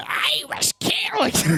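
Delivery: botched, badly done, very high-pitched villain voice. Describing how he pictures a character sounding, attempting a high-pitched Carnage voice. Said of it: "Carnage's voice is much higher pitched".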